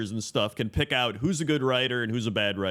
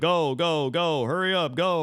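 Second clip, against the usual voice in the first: drawn-out, high, impatient tone; 6 semitones higher than usual. Imitating a guy in a dungeon urging everyone on: imitating an impatient player urging. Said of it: "a guy in the dungeon being like".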